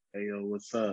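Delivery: very low, hushed, soft put-on bass voice. Showing how you had to talk so people would talk to you, in a put-on bass voice. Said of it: "put a little bass in your voice".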